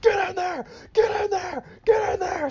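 shrill, pitched-way-up, high, threatening screaming. Retelling how he threatens to throw Patton Oswalt in the oven, do it imitating someone screaming threats. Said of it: "starts screaming at Patton Oswalt and threatening to throw him in the oven".

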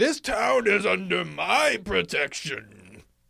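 very high, very loud, rough-edged intimidating shout. Player character trying to intimidate a group, yelling at them. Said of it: "I want to yell at them like".

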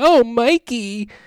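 very high, loud, heavily sarcastic call. Retelling echoing April and the turtles aloud among people, retelling a sarcastic remark. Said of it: "like really kind of sarcastically".

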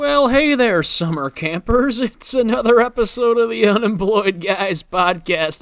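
hopped-up, high, loud surfer-dude voice. Podcast host opening a new episode of the show, in a surfer dude voice. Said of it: "I sound like some sort of surfer dude".

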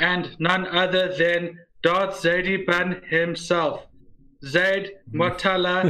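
exaggerated, stiff script-reading voice. Reading the podcast intro from a script, in an exaggerated script-reading voice. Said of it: "imagine if I talked like that".

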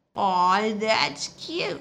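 put-on teasing, condescending baby talk. A woman responds to the narrator's mention of a favorite doll, in baby talk voice. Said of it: "she said in a baby talk voice".

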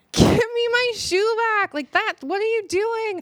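very high, screaming woman's voice.

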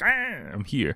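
sudden dinosaur cry. Describing surprising people by popping up, acting like a velociraptor. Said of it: "like a velociraptor or something like that in Jurassic Park".

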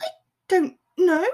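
unsteady voice. At a loss for words, she answers the stunned man in a wobbly voice. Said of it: "she said in a wobbly voice".

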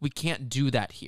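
near tears, voice close to crying. Retelling a scene where Taylor is almost crying, imitating Taylor almost crying. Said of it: "almost crying".

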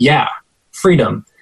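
mock nonchalant, casual tone. Retelling what a girl answered the speaker's friend, imitating a nonchalant reply. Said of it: "she said nonchalantly".

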